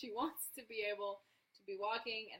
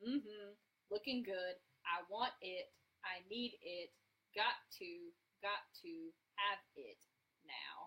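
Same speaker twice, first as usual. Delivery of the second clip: thoroughly unimpressed voice. Speaker relays a woman's answer in a story: Julia's mock-unimpressed voice. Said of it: "in her unimpressed voice".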